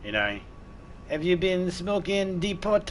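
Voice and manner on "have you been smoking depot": bad, high, put-on French accent. Joking about how a French police officer would ask a question: bad put-on French accent. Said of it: "it's a shitty French accent".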